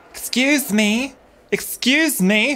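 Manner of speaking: very high reptilian woman voice, calling out. Narrating the scene, voicing the lizard folk woman calling out: lizard folk woman voice. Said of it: "You hear the voice of the lizard folk woman going".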